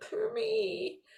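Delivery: little self-pitying whine, high and hushed. Demonstrating the subtext of a position in the game, with a slight whine. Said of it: "Might have a bit of a whine with it".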